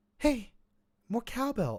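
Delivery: very high, star-style celebrity voice. Doing impressions for the others, the speaker tries a Mark Wahlberg impression. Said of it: "in a Mark Wahlberg voice".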